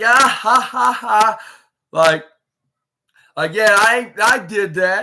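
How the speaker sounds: mock very slow, high, gloating words through laughter. Retelling a wrestler's moment after a crossbody: imitating someone laughing while talking. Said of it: "she started laughing like".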